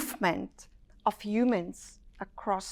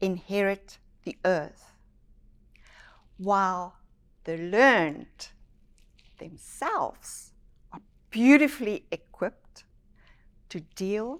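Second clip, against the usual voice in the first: slow, measured, deliberate, unhurried delivery; 4 semitones lower, 12 dB quieter than usual. A speaker quotes someone's saying to listeners so they can take it in, spoken slowly. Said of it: "I said that slowly".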